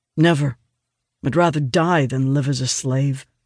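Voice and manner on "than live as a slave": ordinary delivery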